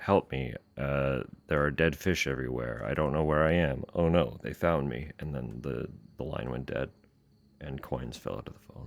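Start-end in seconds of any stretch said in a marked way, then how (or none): none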